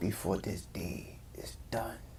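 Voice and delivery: soft, slow, whispered Slavic accent.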